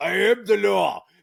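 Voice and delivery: high, rough, loud, raw tough-guy scream. Quote what Sylvester Stallone screams in Judge Dredd, with a Sylvester Stallone scream. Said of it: "he screams".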